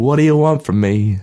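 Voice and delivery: loud, high, belted put-on singing voice. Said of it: "In the words of [name]".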